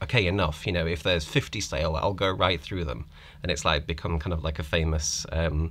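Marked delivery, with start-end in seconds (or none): none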